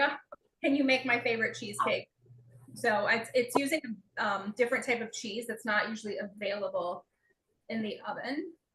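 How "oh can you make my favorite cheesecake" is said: normal talking voice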